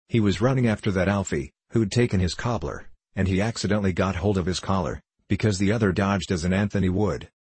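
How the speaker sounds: usual speaking voice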